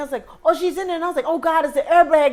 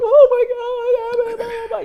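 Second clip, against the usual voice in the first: very high tearful crying voice, "my" stretched; 9 semitones higher than usual. Retelling a car crash, quoting the trapped woman: imitating someone crying.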